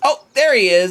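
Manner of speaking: put-on little girl's voice. Voicing a halfling child looking for her lost pet snake: halfling child voice. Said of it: "and she goes".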